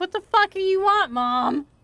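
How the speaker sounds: high-pitched voice for a cat. Voicing what the cat seems to think while staring: voicing her cat's thoughts. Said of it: "He's looking at me like".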